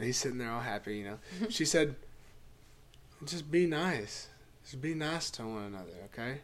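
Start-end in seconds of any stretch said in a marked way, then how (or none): 3.2-6.4 soothing, unhurried, gentle, slow, calm, relaxed voice. Quoting an old woman's words: imitating someone speaking calmly. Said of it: "And she said it so calm".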